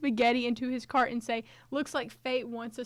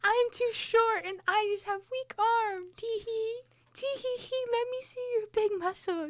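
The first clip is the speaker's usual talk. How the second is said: put-on helpless damsel in distress voice, higher pitch; 11 semitones higher than usual. Acting out asking a stranger for help at a hardware store: high damsel in distress voice. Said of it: "It's a damsel in distress".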